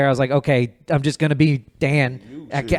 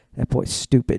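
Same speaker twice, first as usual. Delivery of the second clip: lower, mock muttering under the breath; 3 semitones lower, 3 dB quieter than usual. Retelling an audience member's reaction during a performance: imitating someone muttering under their breath. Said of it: "kinda under their breath go".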